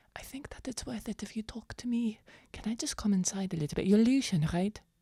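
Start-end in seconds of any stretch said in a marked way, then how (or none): 0.1-3.8 much quieter speech. Player voicing a character at a window asking to come inside, speaking quietly. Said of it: "I think she says this like quietly".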